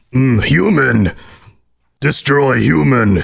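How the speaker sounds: very slow, very drawn-out, creaky, rough brute monster voice. Showing how a mod voice line would sound: super mutant voice. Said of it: "you've got a mean super mutant voice".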